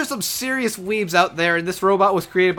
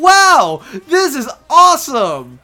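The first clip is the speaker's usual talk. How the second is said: very loud, energetic, cheerful, high, drawn out; 8 semitones higher, 8 dB louder than usual. Describing a character's voice, then imitating Hachi, high-pitched and cheerful. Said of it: "higher pitch, energetic, and cheerful".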